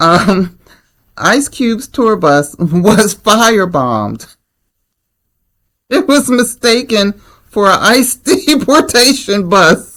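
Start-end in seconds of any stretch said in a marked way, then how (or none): 1.2-10.0 high voice giggling through the words. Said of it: "you see why I'm laughing".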